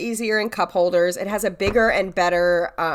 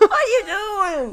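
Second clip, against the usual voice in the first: put-on dog-talk voice, higher; 12 semitones higher than usual. Retelling talking to a dog named Rupert: imitating own dog voice. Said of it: "when I talk like that".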